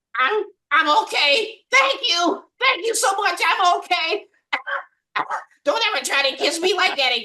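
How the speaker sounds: very high, squeaky cartoon voice. In a group bit, answering as the cartoon character; SpongeBob voice. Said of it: "do the voice of SpongeBob".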